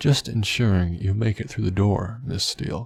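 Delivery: ordinary delivery, nothing marked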